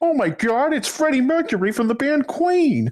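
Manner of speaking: very high, squeaky put-on gag voice. Mocking a comedian's nostalgic reference jokes: impression of McFarlane's humor. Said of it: "That's a pretty good impression there".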